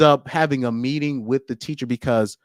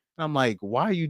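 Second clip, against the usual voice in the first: ordinary talk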